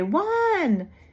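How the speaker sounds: high, loud yelling call. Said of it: "She was always yelling".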